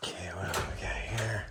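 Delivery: soft, unvoiced whisper.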